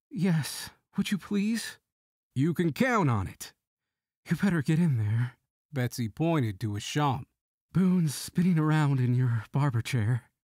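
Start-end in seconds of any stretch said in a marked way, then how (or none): 0.1-1.7 hesitant, tentative. Reading a woman accepting an offer to talk to someone for her, hesitant. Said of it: "Betsy hesitated and then said".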